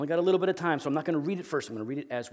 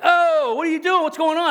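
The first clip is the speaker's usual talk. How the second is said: very high-pitched, loud yelling; 12 dB louder than usual. Parent recounts yelling at a son who came out onto the porch, retelling a yell. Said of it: "I'm yelling at him".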